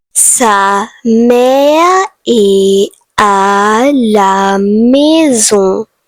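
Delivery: slow, deliberate, careful, unhurried French pronunciation. Saying French example sentences for learners to practise along: speaking slowly. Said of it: "I am going to say slowly".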